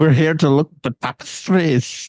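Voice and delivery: horrible put-on Scottish accent. Imitate a movie character doing his put-on voice, in a horrible scottish accent. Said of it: "he does that horrible fucking Scottish accent".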